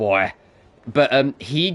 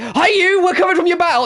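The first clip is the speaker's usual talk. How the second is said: put-on, mock, very high, stretched-out screaming, every word; 5 dB louder than usual. Retelling how Dory shouts in the Japanese dub: imitating screaming Japanese Dory. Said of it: "She's like".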